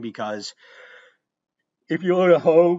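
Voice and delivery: words stretched by a yawn. Explaining the definition of support for a qualifying child: yawning mid-sentence. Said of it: "I'm yawning at my own qualifying child definitions".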